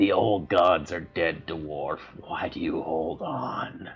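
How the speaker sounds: taunting tone spoken through a laugh, smiling. Voicing a foe who taunts a dwarf in combat: laughing while speaking. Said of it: "she smiles and laughs at you".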